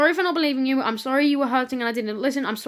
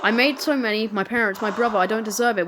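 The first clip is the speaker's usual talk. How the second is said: ordinary delivery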